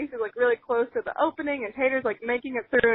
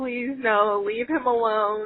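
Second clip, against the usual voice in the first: put-on sobbing, crying voice; 2 semitones lower than usual. Retelling watching the dog attack from behind a fence: imitating own sobbing plea. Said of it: "just boo-hoo crying".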